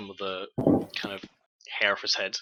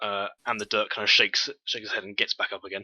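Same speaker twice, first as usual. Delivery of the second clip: usual speaking voice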